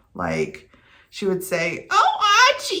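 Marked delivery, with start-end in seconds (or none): 1.9-2.8 very high-pitched outburst. Showing viewers how the sitcom character sounded: Edith Bunker voice. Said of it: "she had this voice".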